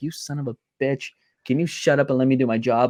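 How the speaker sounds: annoyed, irritated, fed-up complaining tone. Imagining a commentator's reaction to his co-commentator: imitating Michael Cole irritated. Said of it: "you could hear the irritation in Michael Cole's voice".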